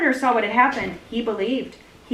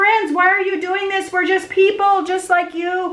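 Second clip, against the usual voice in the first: yelling, higher and louder; 8 semitones higher, 4 dB louder than usual. Telling the story of Paul and Barnabas, acting out their words: shouting. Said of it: "And they shouted".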